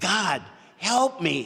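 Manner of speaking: drawn-out high scream. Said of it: "And he screamed out".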